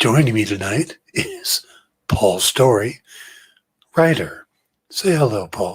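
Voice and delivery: put-on golf announcer voice, televised commentator style. Opening the show while pretending to announce a golf game: put-on golf announcer voice. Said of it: "talking like we're announcing a golf game".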